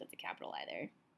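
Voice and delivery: soft, quiet whispered voice.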